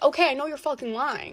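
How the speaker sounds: usual speaking voice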